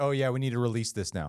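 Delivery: ordinary delivery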